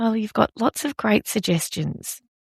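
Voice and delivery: very quiet, soft, understated delivery. Retelling own remark about his suggestions: imitating saying it very quietly. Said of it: "I just said that very quietly".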